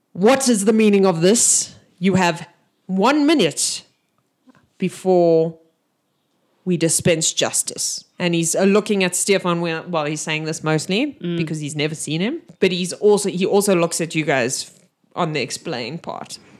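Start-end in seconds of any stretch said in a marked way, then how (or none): 0.2-8.1 very booming giant orc voice. Game master voicing Gorga addressing the players, in a very booming voice. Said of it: "He's got a very booming voice".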